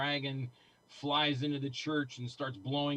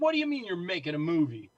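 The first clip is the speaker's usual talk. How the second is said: put-on yell, higher and louder; 4 semitones higher, 6 dB louder than usual. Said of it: "He started yelling at me".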